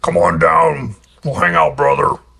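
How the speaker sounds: very rough, creaky, gravelly voice. Retelling how Bobby invited them over, imitating Bobby's gravelly voice. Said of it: "he had the real rough, gravelly voice".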